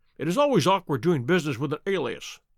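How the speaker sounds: ordinary delivery, nothing marked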